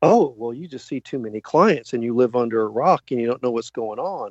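normal talking voice

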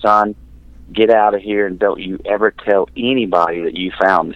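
mock, very stern voice. Retelling what a man said, standing behind him as a boy: retelling a very stern order. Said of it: "in this very stern voice".

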